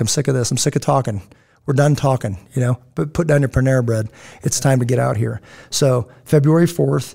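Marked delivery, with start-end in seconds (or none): none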